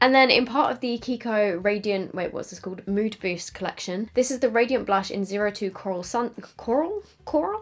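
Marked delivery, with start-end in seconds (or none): 6.6-7.6 terrible fake American accent, very high pitch. Makeup reviewer reading out a blush shade name, terrible American accent. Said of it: "Did I just turn American?".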